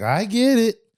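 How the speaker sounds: high, loud, snippy tone. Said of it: "The attitude, the attitude is everything".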